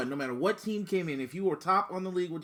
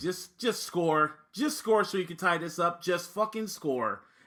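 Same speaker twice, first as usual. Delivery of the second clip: ordinary talk, nothing marked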